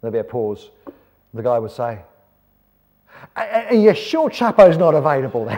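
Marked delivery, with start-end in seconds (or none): 3.4-5.6 very loud, high, fake Australian accent. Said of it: "Love my Australian accent".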